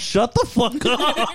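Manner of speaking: high, slow, drawn-out mock rude dismissive tone.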